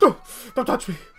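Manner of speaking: with frustration. Narrator voicing a character whose calm turns to frustration when petted, frustrated. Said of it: "the calm turns to, like, frustration".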